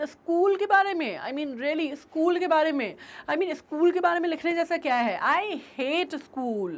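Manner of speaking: put-on scornful, fed-up sarcasm with a negative tone. Explaining a story character's reply about school: imitating a sarcastic, negative tone. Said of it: "kind of a sarcastic way or very in a negative tone".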